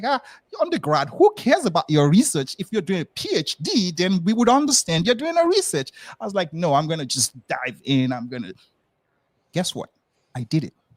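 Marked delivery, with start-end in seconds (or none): 0.0-5.9 play-acted, pitched-up, dismissive scoffing through laughter. Speaker recalls mom laughing at their undergrad research; imitating mom laughing dismissively. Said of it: "my mom was just laughing like".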